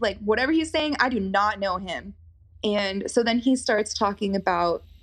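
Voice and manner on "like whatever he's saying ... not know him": normal talking voice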